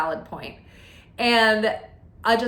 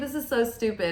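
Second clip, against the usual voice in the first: ordinary talk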